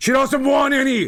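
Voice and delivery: high, shrill yell from far in background. Retelling how dad yelled from the background during vacuum sales calls, imitating dad yelling. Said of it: "my dad would be in the background yelling like".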